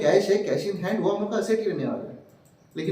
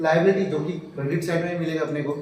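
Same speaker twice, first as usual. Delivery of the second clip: normal talking voice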